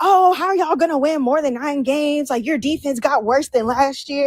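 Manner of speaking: plain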